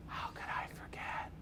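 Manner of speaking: very soft whisper under the breath. Showing how they quote a movie villain to themselves: whispered Jim Carrey Riddler quote. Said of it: "I'll whisper to myself".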